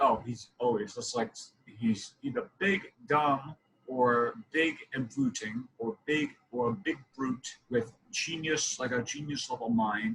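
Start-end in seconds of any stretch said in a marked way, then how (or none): none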